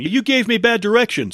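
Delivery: high, loud, exasperated yell.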